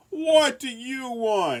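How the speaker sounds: very high, drawn-out, cross shout with audible relief. Reading a story aloud, Gabriel woken at night: angry shout. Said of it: "shouted a relieved but angry Gabriel".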